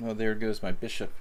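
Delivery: ordinary delivery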